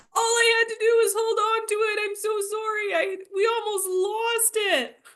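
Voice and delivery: very high, tearful sobbing, crying. Two players acting out a scene together, both on the ground, acted crying. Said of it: "We're both just like crying on the".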